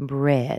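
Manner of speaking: pitch falls on the word bread. Repeating the last item in her list: falling pitch on bread. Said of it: "Did you notice how the intonation dropped in that word?".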